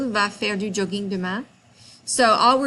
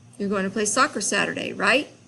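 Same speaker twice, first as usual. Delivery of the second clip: plain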